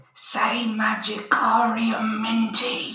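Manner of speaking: secret, hushed half-whisper, close up. A player's character leans in to half-whisper words for another character to say, half-whispering. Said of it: "I'm going to whisper in your ear".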